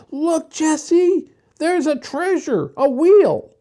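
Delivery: joyful, very high-pitched, loud, happy cry. Benny, walking behind his two sisters, calls to jessie; happy cry. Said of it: "he cried happily".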